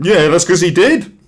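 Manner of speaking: high, loud, cocky, swaggering delivery.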